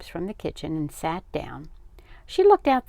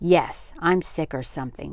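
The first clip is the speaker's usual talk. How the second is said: plain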